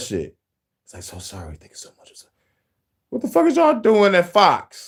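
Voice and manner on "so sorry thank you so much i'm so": whisper, lower and quieter. Imitating an apology overheard on a hot mic: imitating a whisper. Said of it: "I heard that whispering".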